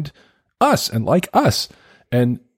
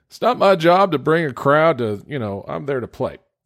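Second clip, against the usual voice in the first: put-on Southern accent, higher pitch; 4 semitones higher than usual. Quoting people on the internet, imitating them in a southern accent. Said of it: "I don't know why I do this in a Southern accent".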